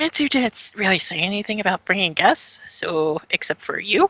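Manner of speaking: theatrical whisper. Speaking in character to another player near a door: half-whispering. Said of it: "I kinda whispers".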